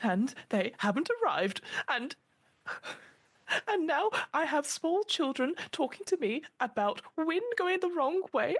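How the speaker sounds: very high, tearful voice, crying through speech. A narrator speaks as Harriet to four listeners as she breaks down, Harriet crying. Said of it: "starting to cry these big tears".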